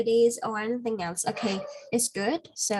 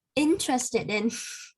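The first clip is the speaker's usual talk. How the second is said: interested with stress on the first syllable "in-". Speaker modeling a phrase for a learner to repeat: stress on in of interested. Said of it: "The first stress".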